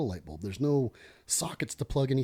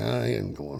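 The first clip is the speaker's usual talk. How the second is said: low, put-on Hawaiian local accent; 4 semitones lower than usual. Retelling what a friend said in the moment, doing an imitation of a hawaiian accent. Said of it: "doing Jason's Hawaiian accent".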